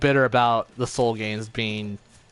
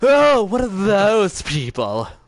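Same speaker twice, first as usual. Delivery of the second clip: flamboyant camp voice, high and loud; 9 semitones higher, 5 dB louder than usual.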